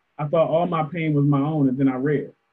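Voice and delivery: ordinary talk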